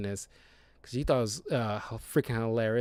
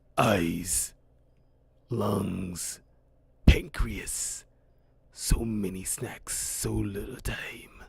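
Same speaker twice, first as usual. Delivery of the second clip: deep, rough monster voice, drawn out low; 4 semitones lower than usual. Describing a trailer scene where Venom speaks to a henchman, doing the Venom voice. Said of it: "It's this cool voice".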